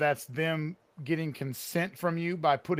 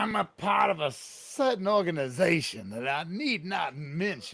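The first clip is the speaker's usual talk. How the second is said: acted cartoon rooster voice, Southern accent. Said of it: "talking like Foghorn Leghorn".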